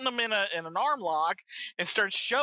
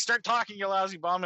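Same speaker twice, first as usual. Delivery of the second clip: ordinary talk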